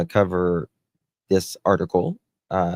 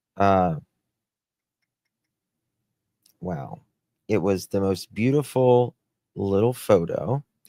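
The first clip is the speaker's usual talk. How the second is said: voice choking up, tearing up. Describing a photo that warmed the heart, tearing up. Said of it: "I'm getting crying right now".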